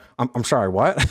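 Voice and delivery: put-on confused voice, speaking with mouth full. Acting out a player hearing the news mid-meal: imitating Ian with mouth full. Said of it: "a mouthful of food, and he's like".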